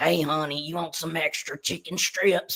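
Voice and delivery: country lunch lady voice of a smoker. Doing a lunch-lady bit, country lunch-lady smoker voice. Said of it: "I was doing the voice of like country, um, like lady smokers, like lunch ladies".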